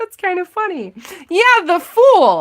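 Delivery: talking through laughter, high and swooping. During a card reading, the speaker apologizes for laughing; laughing while talking. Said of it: "I'm sorry, I'm laughing".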